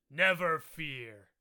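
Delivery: loud, rough, gruff creature voice. Describing a raven-like creature and voicing what it says, in a gruff voice. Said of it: "in like a gruff voice it says".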